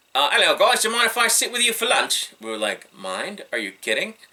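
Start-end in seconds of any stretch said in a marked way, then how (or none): 0.3-2.2 put-on very high-pitched, raised English accent. Retelling a man walking up to them during lunch: Kenny Davison's English accent. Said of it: "says in his English accent".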